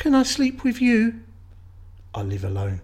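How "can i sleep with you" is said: put-on tiny, very high little child's voice. Reading a horror story aloud, voicing a character with a small voice. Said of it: "a small voice says".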